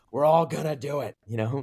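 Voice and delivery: put-on gruff voice. Quoting Roy Kent as an early adopter: gruff Roy Kent voice. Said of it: "in his gruff tone".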